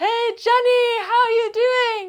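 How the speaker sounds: mock very high yell, like calling across a distance. Retelling what other climbers called across the rock: imitating shouting. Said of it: "screaming, like, back and forth".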